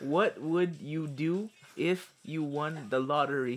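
very slow, over-enunciated, exaggerated mouthing. Telling a player a question after being asked: mouthing the words slower. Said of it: "Mouth it slower".

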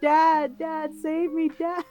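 mock screaming. Describing a show scene where the daughter calls for her dad, imitating her screaming. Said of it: "she's screaming".

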